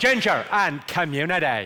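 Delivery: put-on Belfast accent, "community" drawn out. Teaching the audience a phrase for getting the accent right, in a Belfast accent. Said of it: "the phrase I use to get the Belfast accent right".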